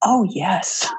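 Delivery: hushed whispering. Answering another speaker's question with a brief agreement, whispering. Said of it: "Why am I whispering?".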